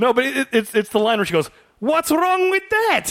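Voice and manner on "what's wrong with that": put-on Polish accent, rolled R, much higher. Speaker quotes a woman's line, imitating her rolled-R Polish accent. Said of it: "she kind of rolls her R a little bit".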